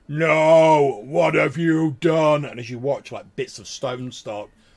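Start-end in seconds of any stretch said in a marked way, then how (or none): 0.2-2.5 voice booming out, very loud, high, very slow. Telling a story, a voice booms out from the stone, booming voice. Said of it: "this voice like booms out".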